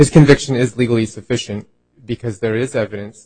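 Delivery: speaking up loudly.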